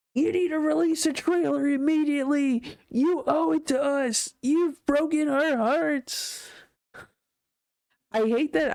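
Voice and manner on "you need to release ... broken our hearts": mocking voice in a high pitch. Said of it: "I probably sound like I'm mocking people".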